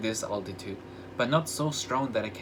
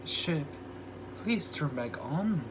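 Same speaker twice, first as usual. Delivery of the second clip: put-on baby talk, up high; 4 semitones higher, 4 dB quieter than usual. Sam asks the ship more nicely, voice up an octave like talking to a baby. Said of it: "his voice goes on an octave like he's talking to a baby".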